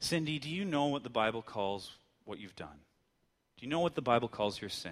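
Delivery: mild, gentle and careful soft tone. Retelling what a friend said to a woman, retelling a gentle voice. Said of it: "with a gentle voice".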